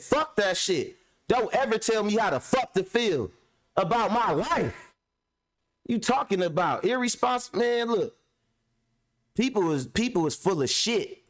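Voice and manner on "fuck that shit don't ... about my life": put-on angry, heated tone, held in. Retelling what was said back to someone: retelling own yell. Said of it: "Talking about don't yell at you".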